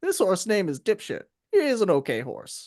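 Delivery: lively, swooping, animated ranch stable-hand voice. Retelling a game character introducing each horse, impression of the horse guide. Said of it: "just to like do the impression".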